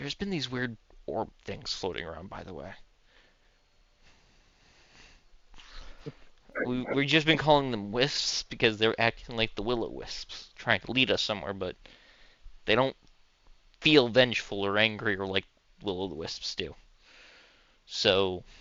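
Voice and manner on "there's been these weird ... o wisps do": quiet, hushed, half-whispered delivery. Voicing a satyr who walks up to a player: half-whispering satyr. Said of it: "walks up and whispers to you".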